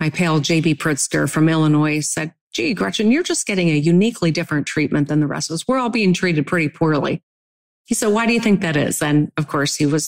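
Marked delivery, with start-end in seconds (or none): 8.1-9.0 put-on, pointed, sarcastic tone. Recounting what a pal asked her, retelling a sarcastic question. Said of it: "being sarcastic".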